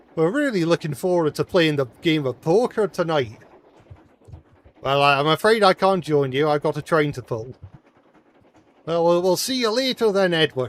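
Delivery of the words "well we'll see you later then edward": put-on Scottish accent, pitched up. Character bids farewell to Edward, who can't join the poker game: Scottish accent. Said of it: "I could do a better Scottish accent".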